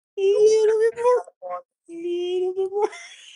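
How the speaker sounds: squeaky coaxing voice.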